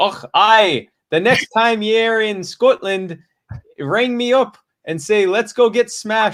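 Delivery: put-on Scottish accent, very high, slow, drawn out. Reading a letter written to sound scottish: scottish accent. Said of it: "he's gonna sign it in Scottish".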